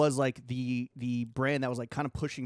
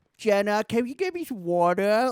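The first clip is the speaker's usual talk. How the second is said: put-on high, loud old man voice with speech impediment; 8 semitones higher, 7 dB louder than usual. Mocking another speaker who will wear a night guard: imitating old man speech impediment. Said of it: "old man speech impediment".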